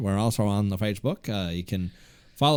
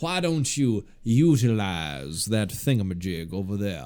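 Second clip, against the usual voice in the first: put-on Southern gentleman accent. Demonstrating how a Southern gentleman would phrase it, in a Southern gentleman voice. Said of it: "if you are a Southern gentleman".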